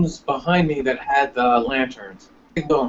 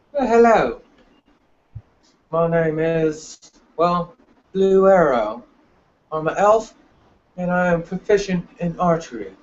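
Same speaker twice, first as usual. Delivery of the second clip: put-on British accent, held steady all the way; 4 semitones higher than usual. A player introducing their elf character to the group when asked, in a British accent. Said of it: "And he's British".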